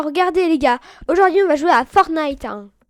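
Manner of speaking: put-on exaggerated overreaction. Mocking how he overreacts, the speaker imitates his mock overreacting voice. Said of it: "il va prendre une voix comme ça".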